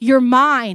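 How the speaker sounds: loud, firm, fatherly god voice, said with certainty.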